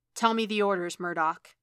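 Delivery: ordinary delivery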